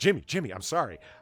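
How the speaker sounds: acted-out, desperate, pleading begging voice. Retelling a card player apologizing after a threat: imitating someone begging. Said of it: "started begging with his hands out".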